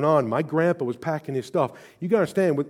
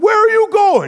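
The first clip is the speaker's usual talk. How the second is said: put-on shrill, loud, howling, high-pitched sobbing child voice; 9 dB louder than usual. Retelling a childhood memory as a third-grade kid, acting out bawling. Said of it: "Like I'm just bawling".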